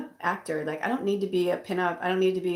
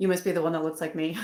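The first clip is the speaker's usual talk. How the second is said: plain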